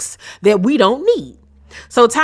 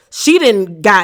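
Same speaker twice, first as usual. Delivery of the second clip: ordinary talk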